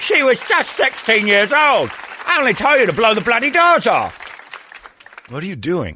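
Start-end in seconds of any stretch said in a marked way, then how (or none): 0.0-4.3 very high screaming voice. Joking about when to use the impression: screamed Michael Caine impression. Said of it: "my Michael Caine impression is brilliant".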